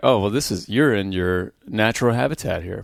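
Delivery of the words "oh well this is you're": plain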